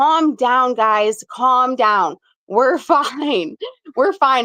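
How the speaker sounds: slow, forced calm voice through laughter. Retelling calming friends after the bridge shook: imitating own forced calm while laughing. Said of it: "trying to keep my composure. I'm laughing".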